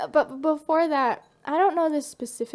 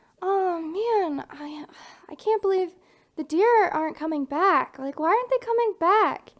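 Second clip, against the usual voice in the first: mournful, lamenting, complaining motherly voice; 3 semitones higher than usual. Speaker retelling their mom's words in the hot tub, imitating mom lamenting. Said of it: "My mom was saying".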